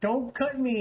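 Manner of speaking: acted, high-pitched, tearful crying plea. Retelling a head shave done with a knife: imitating own past crying. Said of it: "And I'm crying".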